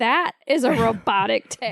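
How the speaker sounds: slow, self-assured, utterly certain declaration. Teasing a friend by retelling his claim: imitating someone sounding very sure. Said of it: "You were so sure of yourself. You're like".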